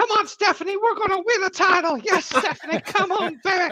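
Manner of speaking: very high-pitched lecherous, leering voice. Imagining a new wrestling manager cheering on Stephanie, in a Family Guy pervert voice. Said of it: "It sounds like the pervert from Family Guy".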